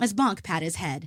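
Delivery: plain reading voice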